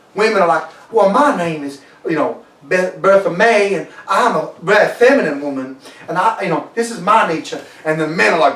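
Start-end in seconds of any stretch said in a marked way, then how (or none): 0.9-7.6 put-on, slow, drawn-out southern drawl of Texas woman. Speaker imitates a texas woman introducing herself, in a put-on southern accent. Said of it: "that southern accent".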